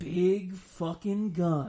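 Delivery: put-on reverent delivery. Recounting a scene where a character enters an armory, mock-reverential tone. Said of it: "in this reverential tone".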